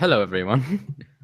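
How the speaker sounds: sudden switch into a British accent. Greeting everyone as the talk resumes: British accent. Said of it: "Not sure why I'm speaking British now".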